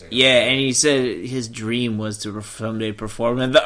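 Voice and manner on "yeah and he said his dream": usual speaking voice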